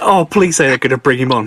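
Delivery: ordinary talk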